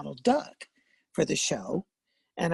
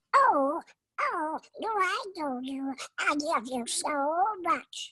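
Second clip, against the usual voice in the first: high, very slow, innocent voice; 12 semitones higher than usual. Showing the difference between character voices: innocent Little Quacker voice. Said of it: "Little Quacker is a higher pitched voice and he's very innocent".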